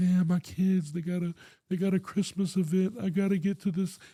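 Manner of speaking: play-acted, tearful, crying, pleading voice. Retelling begging a cop to be let go: imitating own past crying plea. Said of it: "I went up to him crying, like".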